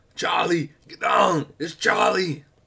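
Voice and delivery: loud, slow action-hero voice. Retelling going down an aisle with someone on the other side: Schwarzenegger voice. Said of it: "I don't know why I picked Arnold Schwarzenegger's voice".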